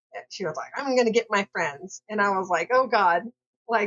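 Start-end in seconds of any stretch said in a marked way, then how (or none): 0.7-2.0 mock-angry, put-on angry tone. Recounting how a woman got mad and stormed off, quoting her: mock-angry threat. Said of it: "she got really mad and stormed off".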